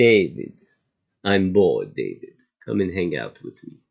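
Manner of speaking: put-on Russian accent in a woman's voice. Retelling what an older Russian lady said to David, in a Russian woman's accent. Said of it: "she had a greatest accent".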